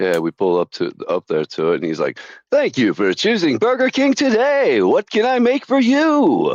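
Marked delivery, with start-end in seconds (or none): 2.5-6.5 very high, swooping radio-announcer patter. Retelling a drive-thru order at Burger King: imitating a radio announcer voice. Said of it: "was trying to be a radio announcer".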